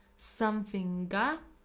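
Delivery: normal talking voice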